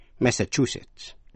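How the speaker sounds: third syllable chu stressed in Massachusetts. Reading US state names aloud: stress on chu in Massachusetts. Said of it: "nhấn mạnh vào vần thứ ba".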